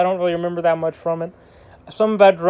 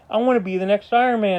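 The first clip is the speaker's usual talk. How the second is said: normal talking voice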